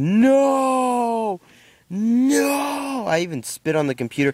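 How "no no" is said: mock very high, stretched-out, loud drawn-out yell. Retelling a reaction to the first match ending: retelling own loud yell. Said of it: "I yelled loud, so loud".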